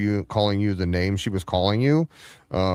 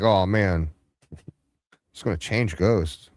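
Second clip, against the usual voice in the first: ordinary delivery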